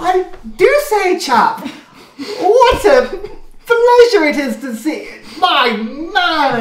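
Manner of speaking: high, slow, hearty jolly character voice.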